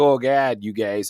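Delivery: put-on, low Chicago Midwestern accent. Discussing accents in chicago movies, quoting an actor: chicago midwestern accent. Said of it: "a pretty slick Midwestern accent".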